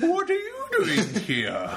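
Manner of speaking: preposterous, very high, very posh upper-crust voice. Speaker mimics the other speaker's take on a film line: very posh put-on voice. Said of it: "Because it's very posh".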